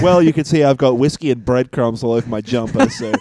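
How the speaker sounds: plain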